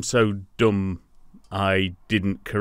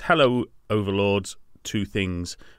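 normal talking voice

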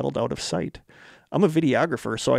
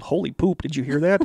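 startled, blurted-out yell; 2 semitones higher than usual. Retelling a startled moment to another speaker: retelling own yell. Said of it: "and I just yelled".

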